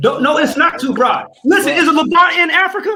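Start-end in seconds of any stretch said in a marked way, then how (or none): 1.4-3.0 heated, high-pitched scream. Arguing over whether the levant is in africa: screaming. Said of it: "Why you screaming?".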